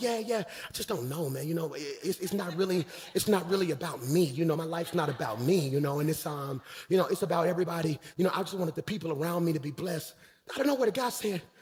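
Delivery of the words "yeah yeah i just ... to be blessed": put-on calm, cool, laid-back easygoing tone. Retelling a meeting with label people: retelling playing it cool. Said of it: "I'm kinda cool now".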